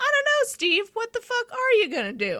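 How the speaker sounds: put-on very high, swooping tiny little child's voice. Retelling a story of a father working on his car, imitating a tiny child voice. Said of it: "heard a tiny voice from the walkway say".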